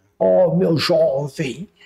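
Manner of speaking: words muffled and mushy as if mouth full. Imitating the former director, as an interviewer asked: imitating Liberale talking mouth-full. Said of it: "ele falava assim, com a boca cheia".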